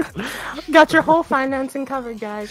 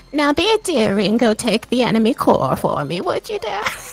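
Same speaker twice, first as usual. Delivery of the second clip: put-on sing-song old lady announcer voice; 4 dB louder than usual. On a stream, the speaker pitches an announcer voice pack in a grandma announcer voice. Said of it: "The grandma announcer pack".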